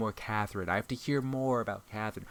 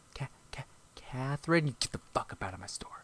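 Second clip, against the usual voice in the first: mock-angry voice, much quieter; 7 dB quieter than usual. Speaker imagining confronting a customer named Catherine in their store, mock-angry. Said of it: "just fucking triggers so much anger in me".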